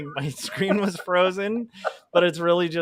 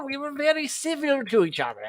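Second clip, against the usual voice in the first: fake British accent, higher; 9 semitones higher than usual. Voicing a Civil War soldier in a put-on British accent. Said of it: "a British".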